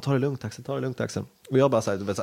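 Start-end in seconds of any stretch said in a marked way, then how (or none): none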